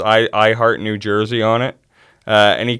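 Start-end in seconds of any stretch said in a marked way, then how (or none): none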